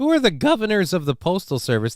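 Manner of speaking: high voice cracking and breaking. Asking a question while reading out a statement, voice cracking. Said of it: "Thank you, voice crack".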